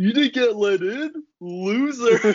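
put-on very high, slow, drawn-out drunken taunting voice. Retelling what they said after coming in that night, retelling being super drunk. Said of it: "I was like super drunk".

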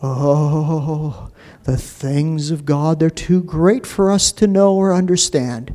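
put-on pious churchy voice, drawn-out oh. Speaker mocks people who stop reading at that verse: put-on religious voice. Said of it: "they put on this religious voice and they go".

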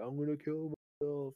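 acted, toned-down, high-pitched, mild screaming outburst. Retelling a man screaming at the overnight manager: imitating someone screaming. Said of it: "screaming at the overnight manager".

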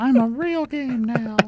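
put-on very high-pitched puppet boy voice. Podcast host joking that a game is becoming a real game: Pinocchio voice. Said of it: "That was my Pinocchio voice".

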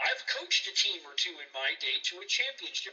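usual speaking voice

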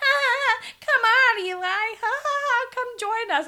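annoying giggly call, very high, loud, very slow. Describing a girl hanging out with Eli, imitating Lenore's annoying loud laugh. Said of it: "really annoying, loud, laughing girl who's like".

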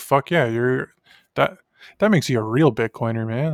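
plain

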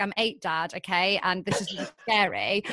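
ordinary talk

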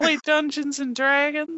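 very high cartoon old-man voice, sounding younger. Speaker describes someone as a younger version of the Family Guy old guy: younger Family Guy old-guy voice. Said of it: "it's like the younger version of the old guy".

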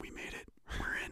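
hushed whisper, barely above a breath. Retelling getting through the zoo bag checkpoint: whispering. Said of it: "I, like, whisper it".

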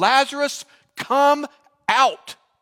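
firm, authoritative, commanding, very loud and high. Retelling a Bible story, voicing the command to the dead man, firm and commanding. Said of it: "in a firm, commanding voice".

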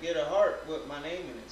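ordinary talk

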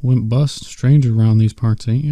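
plain reading voice

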